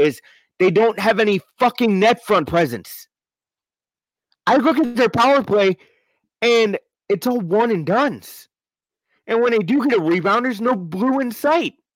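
voice climbing, worked up. Complaining about the Blues' power play to another speaker: getting louder, worked up. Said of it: "I'm sorry I'm getting a little louder here".

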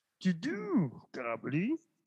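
high-pitched put-on voice with swooping pitch. Joking about doing comedy, suggesting a line in Yoda voice. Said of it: "Or you could do a Yoda voice, like".

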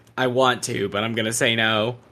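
mock deflated, dejected, gloomy child voice. Retelling how they sounded a moment ago: imitating a dejected child. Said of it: "dejected child levels".

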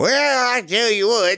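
put-on old person voice. Asked to rate newfangled technology, answering in an old person voice. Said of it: "you have to say it in an old person voice".

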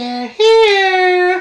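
shrill, creepy, high cry, drawn out. Two people trading movie-character impressions: Carol Anne impression. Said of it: "I'm good at Tangina saying Carol Ann".

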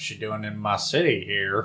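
put-on Southern accent. Imitating a sheriff questioning a newcomer: Southern sheriff accent. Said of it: "Where is the city with that accent?".

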